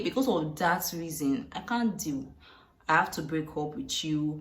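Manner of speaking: ordinary talk, nothing marked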